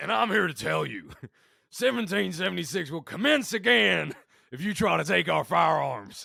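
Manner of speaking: animated, throat-straining, very loud rant. Retelling Alex Jones on Piers Morgan, doing his line: Alex Jones impression. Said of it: "every time I do that voice, it gives me like scar tissue on my larynx".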